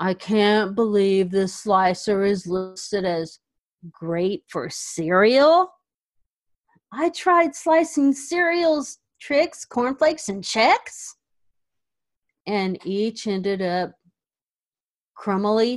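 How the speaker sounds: put-on mournful, heartbroken, sad reading aloud. The speaker reads a product review aloud, in a put-on sad voice. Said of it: "I decided to read these really sad".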